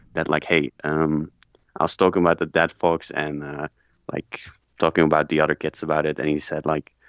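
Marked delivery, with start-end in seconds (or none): none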